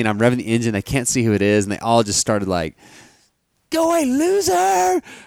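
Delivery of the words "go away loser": shrill, creaky, very high, rough jeering yell. Retelling how onlookers yelled at the speaker revving the engine, retelling a yell. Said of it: "yelling at me".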